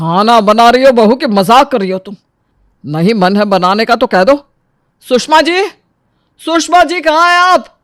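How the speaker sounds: irritated, cross, angry scolding. A father-in-law, irritated by the food, shouts at his daughter-in-law: irritated shouting. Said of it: "इतना क्यों चिल्ला रहे हैं?".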